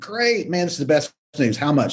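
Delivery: put-on super relieved voice. Retelling a client's reply to the good news: imitating a super relieved client. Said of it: "they're super relieved".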